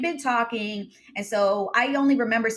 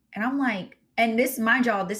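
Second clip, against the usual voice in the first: plain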